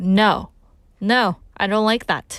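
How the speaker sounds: blunt, cutting, harsh, slow delivery. Showing how feedback to a friend can hurt, in a harsh tone. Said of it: "If you say it in a harsh way, like".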